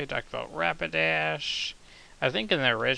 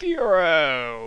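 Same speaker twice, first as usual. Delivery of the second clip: loud, drawn-out, all-out yell; 6 dB louder than usual. Acting out a Pokemon name written in all caps: yelling Fearow. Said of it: "Sorry for yelling at you guys".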